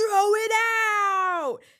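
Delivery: screaming, very high, shrill and very loud. Retelling how a worker started yelling at a friend: imitating someone yelling. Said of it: "he starts yelling at Talia".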